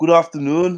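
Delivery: put-on mimicked Scouse accent. Quoting the listener, who slipped out of character, imitating a Scouse accent. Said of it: "Scouse accent?".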